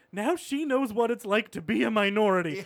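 acted fighting back tears. Retelling a sitcom scene's follow-up, imitating someone holding back tears. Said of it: "trying to hold back tears".

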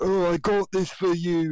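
high, bad, poorly done fake English accent. Recalling a default voice he hated, doing a poorly done English accent. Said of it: "like a poorly done English accent".

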